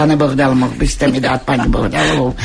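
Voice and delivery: ordinary talk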